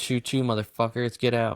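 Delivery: ordinary delivery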